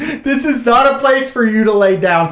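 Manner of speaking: put-on very high, screeching, screaming voice. Speaker retells what a person in medicine screamed at them, retelling a scream. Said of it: "starts screaming at me".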